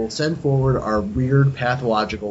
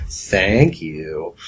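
put-on, pointedly sarcastic; 6 semitones lower, 3 dB louder than usual. Thanking the other speaker on an absent guest's behalf: put-on sarcastic tone. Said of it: "So I'll do it pretty sarcastically".

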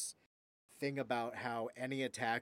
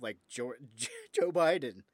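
loud, words breaking up with laughter; 8 dB louder than usual. Quoting a debate line about radical leftists, laughing while talking. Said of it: "I can't even say it without laughing".

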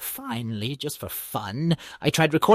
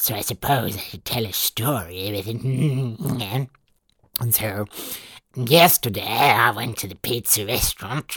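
little gremlin creature voice; 6 semitones lower than usual. Telling a story to test what the AI does with it, little gremlin voice. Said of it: "This is my little gremlin voice".

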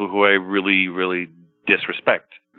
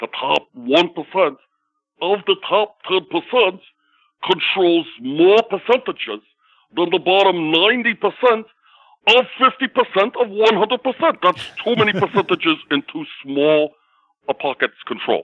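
put-on thick, old-time Brooklyn accent, pitched very high; 11 semitones higher, 3 dB louder than usual. Showing his stand-up impression of Bernie Sanders: Bernie Sanders impression. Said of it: "He's this thick Brooklyn accent".

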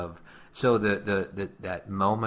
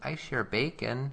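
put-on soft voice, higher and quieter; 5 semitones higher, 4 dB quieter than usual. A parent retelling what Skylar said during a lecture, Skylar's very soft voice. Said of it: "Skylar said in her very soft voice".

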